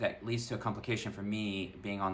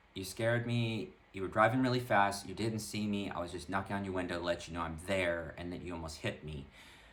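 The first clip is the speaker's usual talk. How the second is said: plain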